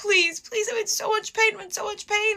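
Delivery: play-acted sobbing, desperate pleading, very high-pitched. Retelling begging hospital staff while in labor: retelling a crying plea. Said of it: "I start, like, crying".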